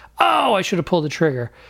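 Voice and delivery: ordinary talk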